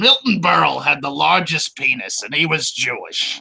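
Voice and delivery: slow, creaky put-on impression voice.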